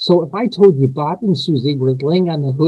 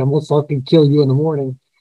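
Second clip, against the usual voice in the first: put-on movie pirate voice, faster. Retelling a man's phone call to him, quoting him in a Dread Pirate Roberts tone. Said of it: "he's got this tone like the Dread Pirate".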